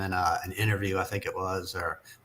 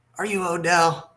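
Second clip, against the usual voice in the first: put-on very high, drunken deep-South Southern accent; 10 semitones higher, 4 dB louder than usual. Retelling asking a stranger if he is odell, imitating own drunk deep southern accent. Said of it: "deep Southern accent that I have".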